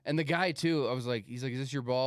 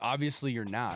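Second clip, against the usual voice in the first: acted laughter while talking. Describing how he would answer a coworker's boast, acting out a laughing reply. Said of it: "laughing like".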